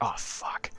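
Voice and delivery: barely audible, very quiet whisper. Voicing a character at a gate door in a game: whispering. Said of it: "your child just whisper".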